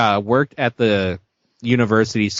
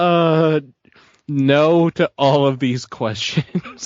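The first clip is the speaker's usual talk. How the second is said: very slow speech, laughing through the words; 5 semitones higher than usual. Answering a string of silly questions: laughing while talking. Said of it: "I can't stop laughing".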